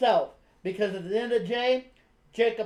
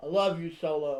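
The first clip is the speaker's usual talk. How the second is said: put-on monotone, much lower, slower, flat; 5 semitones lower, 4 dB quieter than usual. Retelling how he used to say it, imitating a deep monotone. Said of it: "and then with this one, he's like".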